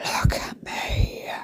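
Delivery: quiet whispering. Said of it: "I'm like".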